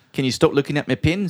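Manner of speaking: bad fake accent, roughly New Zealand. Repeating another speaker's words in a put-on accent: bad put-on accent, near New Zealand. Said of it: "That was closer to a New Zealand accent".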